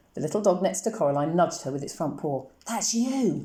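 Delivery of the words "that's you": hissed, hissing voice. Reading a story: a little dog nudges Coraline, hissing. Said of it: "it hissed".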